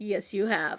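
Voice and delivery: low, deep put-on voice. Retelling how Q answers her: imitating Q's deep voice. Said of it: "he will pull out the, the deep".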